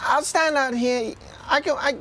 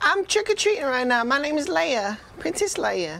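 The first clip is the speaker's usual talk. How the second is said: put-on British accent, put on. A trick-or-treater introduces themself as Princess Leia, in a British accent. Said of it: "Why are you talking in a British accent?".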